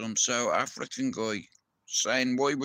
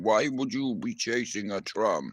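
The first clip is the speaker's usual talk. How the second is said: put-on South African accent; 3 semitones lower than usual. Describing a video of a bleeding kid, imitating a South African man in the background. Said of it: "some South African guy in the back going".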